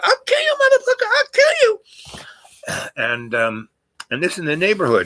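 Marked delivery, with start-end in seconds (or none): 0.0-1.8 very high, furious, shrieking scream. Retelling how the mother chased them: imitating mother screaming threats. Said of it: "she's screaming at the top".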